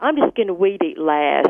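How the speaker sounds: confident, self-assured, everything-handled tone. Asked for an impersonation, doing the husband's line: imitating her husband. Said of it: "how do you do your impersonation?".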